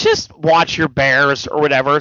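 normal talking voice

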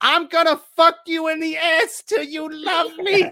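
high, dead-serious scream, in earnest, no joking. Retelling a man screaming at another man mid-conversation, retelling a scream. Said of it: "he screamed it at him like not even as a joke".

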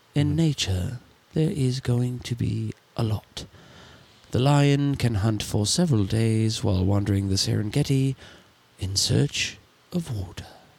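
nature documentary narration style. Showing how the man you would love to have narrate your life sounds, David Attenborough impression. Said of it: "would love Sir David Attenborough".

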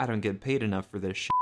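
ordinary delivery

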